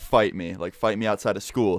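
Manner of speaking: plain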